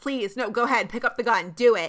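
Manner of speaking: put-on begging voice. Retelling a TV scene where Atwater begs Curtis to pick up the gun: imitating Atwater begging. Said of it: "he's just, like, begging him".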